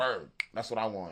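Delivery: ordinary talk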